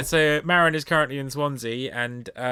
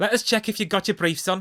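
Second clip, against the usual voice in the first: put-on Liverpool Scouse accent, pitched up; 7 semitones higher than usual. Reading out a listener's story of what a woman said: scouse accent. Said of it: "have to bring the scouse out".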